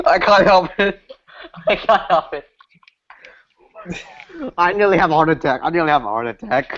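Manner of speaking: talking through laughter. Unable to stop laughing as a hangout wraps up, laughing while talking. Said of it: "If you want to continue laughing".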